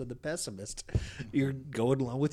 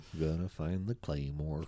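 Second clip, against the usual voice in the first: mopey donkey voice, lower; 7 semitones lower than usual. Describing someone who always assumes the worst, doing an Eeyore impression. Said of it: "pretty good impersonation of Eeyore".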